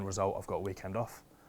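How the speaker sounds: usual speaking voice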